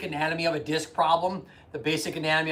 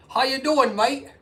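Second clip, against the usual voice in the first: loud, very high, fake, bad Australian accent; 9 semitones higher, 5 dB louder than usual. Greeting someone who joined from Australia: really bad Australian accent. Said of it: "That's probably a really bad Australian accent".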